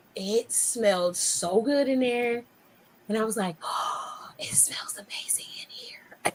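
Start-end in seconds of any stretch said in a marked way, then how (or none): 3.6-6.3 hushed, barely voiced, secretive, awed whisper. Retelling entering a store and smelling the leather: imitating own whisper. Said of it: "Why are you whispering?".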